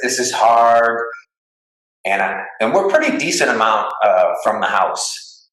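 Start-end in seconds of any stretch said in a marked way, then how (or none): 0.0-1.0 tearful crying voice, spoken through tears. Retelling trudging through deep snow far from the house with him: imitating someone crying. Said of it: "And he's crying".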